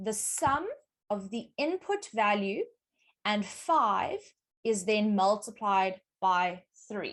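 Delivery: slow, careful, deliberate reading aloud.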